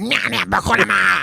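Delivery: put-on gibberish speech. Retelling a man running at you and talking in dialect: imitating someone talking gibberish. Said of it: "He's talking in dialect".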